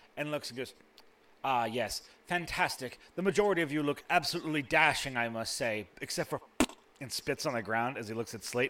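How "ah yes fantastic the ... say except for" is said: snooty, haughty, condescending servant voice. Voicing a nose-upturned servant devil greeting the party: snooty servant devil voice. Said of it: "nose-upturned servant".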